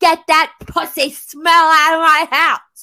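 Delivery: shrill, very loud, high scream at full force. Retelling screaming at someone over a cooking smell: retelling a scream. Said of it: "I was screaming at the top of my lungs".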